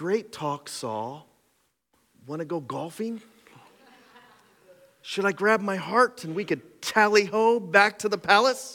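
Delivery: casual, chummy, offhand, pal-like tone. Preaching, imagining what David did not say to Saul: imitating David. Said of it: "David does not go".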